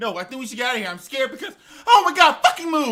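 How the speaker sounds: mock, very loud, fast, rising frantic panic. Retelling how the woman announcer reacted when a robot was pushed at her: imitating a panicking announcer. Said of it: "the woman announcer was losing her shit".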